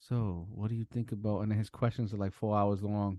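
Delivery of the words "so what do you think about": put-on soft-spoken voice, quieter. Describing two soft-spoken hosts, the speaker does a soft-spoken Lex impression. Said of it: "they both have a very soft spoken voice".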